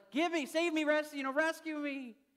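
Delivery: very high, very slow, drawn-out sheep bleat. Telling a story about sheep crying out to be rescued, in a bleating sheep voice. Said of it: "They would start bleeding because they're like".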